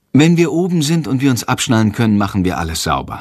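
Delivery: plain reading voice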